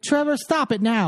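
put-on drawled Southern accent. Retelling how a mean woman scolded them for throwing paper clips: southern drawl. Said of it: "with that southern drawl".

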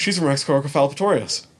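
starstruck, fast, gasping excitement.

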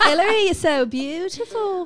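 put-on cute Irish accent. Speaker redoes the accent to compliment the other speaker, in an irish accent. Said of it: "Should we do that accent again?".

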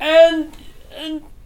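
high, loud, gushing, flattering tone. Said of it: "you're like".

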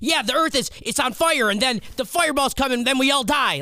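put-on very high little-kid voice. Imitating how a nine-year-old might say it: imitating a little kid. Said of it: "she's being a little kid, like".

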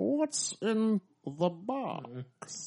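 theatrical, soft villain voice with sweeping pitch. Asked by another speaker for a movie line, doing a Bane voice. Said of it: "in your Bane voice".

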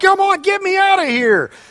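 very high-pitched pleading scream. Showing an audience how a person pleading for their life sounds: screaming plea for help. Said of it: "You're screaming".

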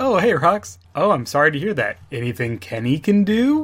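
slick, heavily smarmy voice. Retelling Kenny answering the phone: smarmy Kenny voice. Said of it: "the most smarmy".

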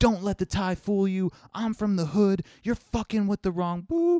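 mock very high, very loud furious raging shout. Retelling a subway argument, imitating a man yelling loudly. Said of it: "loud as fuck".

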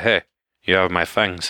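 plain

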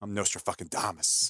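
acted-out whisper. Acting out a man who mutters to himself mid-talk, retelling a whisper. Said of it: "He'll just whisper to himself".

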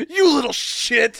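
mock raging, unhinged, high, furious outburst. Retelling how a woman burned her hand on a handrail: imitating someone losing it. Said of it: "she just starts losing it".

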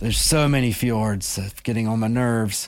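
weary, fed-up, put-upon grumbling complaint. Joking that God is tired of making the world: pretend weary God complaining. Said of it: "and I'm God".

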